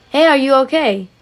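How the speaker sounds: mock yelled, called-out delivery. Retelling a stranger calling out to an injured person: imitating someone yelling out. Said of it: "yell out".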